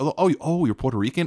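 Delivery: voice sinking low through the line. Speaker imitating people reacting to learning his background, voice dipping. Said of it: "I don't know why the voice dips".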